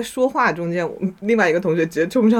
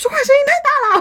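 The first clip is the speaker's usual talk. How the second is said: put-on sudden shrill yell, very high and loud; 3 dB louder than usual. Retelling a classmate suddenly shouting beside them while they chatted, retelling a loud shout. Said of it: "大喊了一声".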